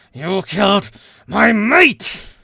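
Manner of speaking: very loud, high-pitched, growling monster snarl. Voicing the Yeti as it snarls at you, snarling yeti voice. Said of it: "and it snarls at you".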